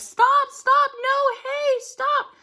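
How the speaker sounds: very high, desperate, frightened screaming and yelling. Retelling a woman desperate to save her dog in a fight, imitating someone screaming. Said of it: "she's yelling and screaming at the top of her lungs".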